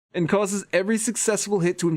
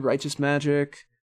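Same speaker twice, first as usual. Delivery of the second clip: ordinary talk, nothing marked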